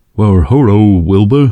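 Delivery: very bad, clumsy talking-horse voice. Describing an old talking-horse show, quote the horse in a very bad Mister Ed impression. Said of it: "that's a very bad impression of a talking horse".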